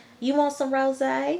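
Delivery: country twang, pitched way up. Retelling a mom's words at her parents' house, in a country twang. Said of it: "her mom has like a country twang".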